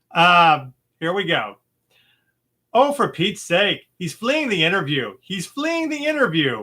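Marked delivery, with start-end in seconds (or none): 2.7-6.6 put-on Fargo-style accent. Quoting a movie line in a guessing contest: Frances McDormand Fargo accent. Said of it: "I gotta do the accent".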